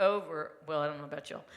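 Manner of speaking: ordinary delivery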